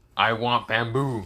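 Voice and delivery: words growled like a beast, animal voice. A panda growls at the one who took its bamboo away, growling panda. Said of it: "the panda growls at Naruto and says".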